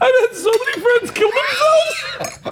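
talking through laughter. Telling another speaker about friends who killed themselves, laughing while talking. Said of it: "Why are you laughing?".

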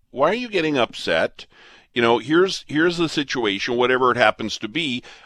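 normal talking voice

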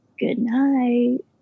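put-on creepy man's voice. Retelling a voice heard while putting the baby to bed: imitating a creepy man's voice. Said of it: "it's a creepy man's voice going".

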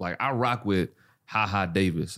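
ordinary delivery

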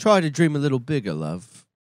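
put-on easy, relaxed British accent. Quoting an actor's film line after praising his British accent: Tom Hardy British accent. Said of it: "He says that in Inception or something".

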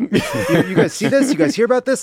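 very high, loud, swooping talk-show patter. Mocking a politician's press remarks, imitating DeSantis like Jay Leno. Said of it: "it's like fucking Leno".

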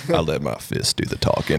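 deepest Southern voice, breathy drawl. Reading out a driver's quote as it sounded in the head: deepest, most Southern voice. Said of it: "the deepest, most Southern voice".

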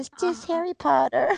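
put-on tiny, cute, very high little girl voice. A mother quoting her small daughter's question, imitating a little girl's voice. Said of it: "Her little voice is so cute".

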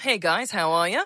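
put-on Australian New Zealand accent. Showing the only line she can do: put-on Australian New Zealand accent. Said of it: "we love an Australian New Zealand accent".

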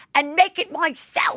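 put-on English accent, pitched very high. Retelling a rude diner's complaint: imitating James's English accent. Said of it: "with his English accent".

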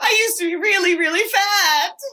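high, sobbing voice. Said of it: "He goes".

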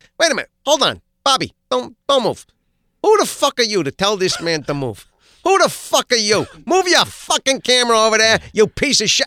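full-tilt, loud, high-pitched ranting. Goofing around on set after a camera guy asks Bob to move: Joe Pesci impression. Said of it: "I started doing Pesci".

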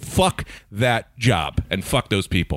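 fed-up, furious, slowly spat out. Venting about a job that fired the speaker: furious. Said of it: "I'm a little furious".

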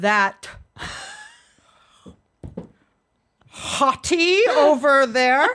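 put-on very slow, swooping, old-school older man's New York accent. Retelling what her almost-eighty dad answered: imitating her dad's old-school Bronx accent. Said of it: "that old school, like, New York accent".

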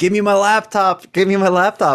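play-acted, excited, repeated high shouting. Retelling what a man screams as police arrive: imitating someone screaming. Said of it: "he comes in the house screaming".

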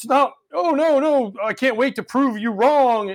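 defensive, high, drawn-out tone. Retelling how Cashman sounds about a bad season: defensive Cashman impression. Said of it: "it's very defensive".

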